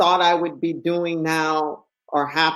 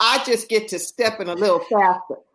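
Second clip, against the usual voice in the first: put-on thick Southern Texas accent, much higher; 4 semitones higher than usual. Retelling what a woman told the speaker, in a thick southern texas accent. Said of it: "this thick Southern Texas accent".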